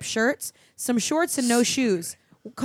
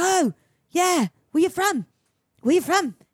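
put-on pitched-up Australian surfer accent; 6 semitones higher than usual. Retelling what an Australian surfer said when he stumbled into them: imitating an Australian surfer. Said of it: "this weird Australian surfer".

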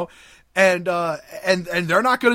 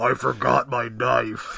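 rough, obvious, deep, gruff goblin voice; 6 semitones lower, 4 dB quieter than usual. Retelling a story, voicing whoever knocked at the door in a gruff goblin voice. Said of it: "you hear this really gruff, obvious goblin voice".

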